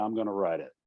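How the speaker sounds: put-on muttering under breath. Retelling own words in the car after a show: imitating muttering under breath. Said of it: "And then under my breath".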